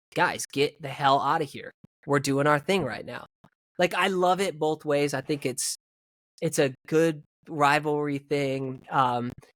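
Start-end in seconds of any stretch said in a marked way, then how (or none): none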